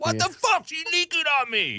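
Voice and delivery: very high, swooping shriek through laughter. Acting out dramatic buddies in an imagined movie: mock screaming while laughing. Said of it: "dramatic buddies screaming and laughing".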